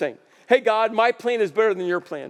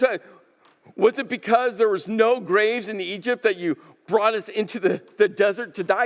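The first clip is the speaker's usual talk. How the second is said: usual speaking voice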